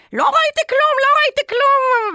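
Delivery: very high, loud shout climbing upward. Recounting when her first boyfriend's mother walked into the room, retelling a shout. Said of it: "והיא צעקה כזה".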